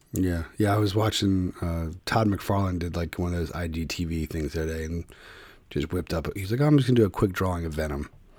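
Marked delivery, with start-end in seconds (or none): 6.6-8.1 mock offhand, casual, matter-of-fact, no-big-deal tone. Retelling an artist's quick drawing video: imitating Todd McFarlane, matter-of-fact. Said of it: "real matter of fact".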